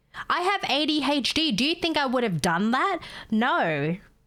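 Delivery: put-on nasty comeback. Retelling a rude reply from a caller on the phone: imitating a nasty caller. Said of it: "She's like".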